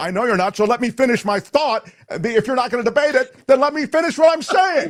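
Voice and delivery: very high-pitched, loud, heated, angry yelling. During a debate over fluoride, refusing to be interrupted, yelling. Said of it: "Why are you yelling?".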